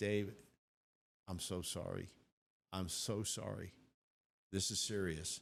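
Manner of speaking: tearful voice, speaking through tears. Retelling what the doctor said on the phone: retelling the doctor crying. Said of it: "and he's crying".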